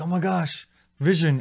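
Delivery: mock heartfelt, emotional exclamation. Retelling a scene where a character sees Vision: imitating Wanda's emotional reaction. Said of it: "And she's emotional".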